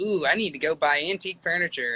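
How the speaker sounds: plain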